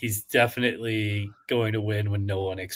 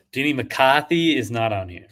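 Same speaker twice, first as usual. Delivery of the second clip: put-on Boston accent; 4 semitones higher, 5 dB louder than usual. Player looking for a name on the list, in a fake Boston accent. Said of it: "That was my Boston accent".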